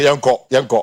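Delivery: plain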